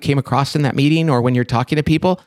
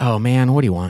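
put-on put-out, annoyed voice, much lower pitched; 4 semitones lower than usual. Telling the listener how they sound answering the phone at home, mock-annoyed phone answer. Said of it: "it sounds like you're like".

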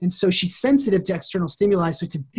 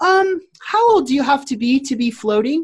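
put-on cute little girl voice, much higher; 7 semitones higher, 3 dB louder than usual. Retelling what a little girl asked the float center owner, in a cute little voice. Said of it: "this cute little voice".

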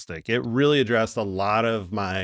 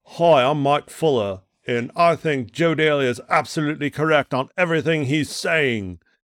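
bad put-on Australian accent, loud, pitched up; 5 semitones higher, 5 dB louder than usual. Pretending to be a caller on the show: Mike Fuller impersonation in bad Australian accent. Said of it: "worst Australian accent and Mike Fuller impersonation".

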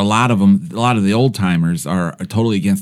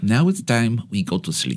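put-on old doctor with German accent; 2 semitones higher, 6 dB quieter than usual. Recalling what an old german doctor said, imitating his german accent. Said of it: "With the accent".

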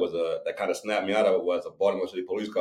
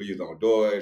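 mock desperate pleading voice. Speaker retells someone they love begging them, imitating someone begging. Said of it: "she's begging me".

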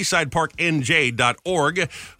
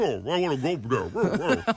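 talking in a put-on dog voice; 5 dB quieter than usual. Joking about a dog park, speaker imitates a dog: dog impression. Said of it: "That's my impression of a dog".

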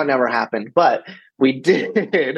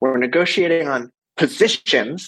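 mock severe, very stern, no-nonsense tone. Retelling what Farzad said to the room on mute: imitating a stern voice. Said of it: "in sort of a very stern voice".

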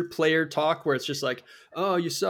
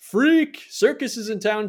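play-acted yelling, high, drawn-out screaming; 5 semitones higher, 5 dB louder than usual. Retelling heckling a high school basketball player: imitating screaming a heckle. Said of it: "I kept screaming".

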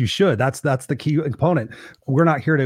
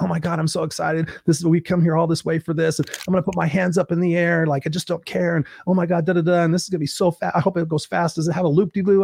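put-on excited chatter, much higher; 4 semitones higher than usual. Retelling a group in a roller coaster line ahead: imitating excited people. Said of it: "we were all excited to be on it".

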